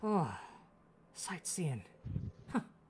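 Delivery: weak, faint, feeble chuckle to himself. A rescued character answers his rescuers, giving a weak chuckle to himself. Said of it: "chuckles to himself very weakly".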